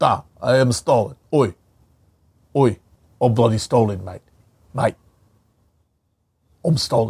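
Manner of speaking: put-on mock Cockney accent. Recalling a favorite piece of casting, act out Michael Caine as Stalin. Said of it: "Michael Caine as Stalin was so good".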